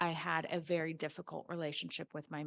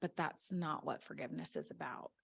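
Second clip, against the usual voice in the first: hushed, low-key, very quiet, soft delivery; 3 semitones lower, 5 dB quieter than usual. Retelling what a friend said in reply, retelling very quiet speech. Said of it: "my friend just very quietly said".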